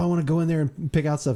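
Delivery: plain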